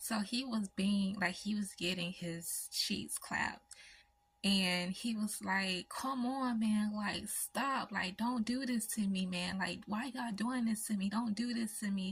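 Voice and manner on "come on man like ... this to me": acted-out, hollered begging in a man's voice. Recounting hearing a man beg others to stop, retelling begging. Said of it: "begging for them to stop".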